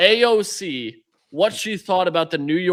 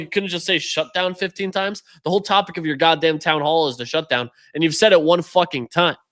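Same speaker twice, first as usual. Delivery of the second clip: usual speaking voice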